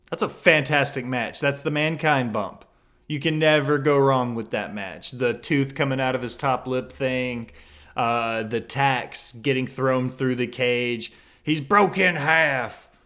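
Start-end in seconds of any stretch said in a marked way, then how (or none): 11.4-12.8 put-on excited wrestling commentator voice, higher and louder. Recalling a famous wrestling match bump: J R impression. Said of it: "That's my best J R impression".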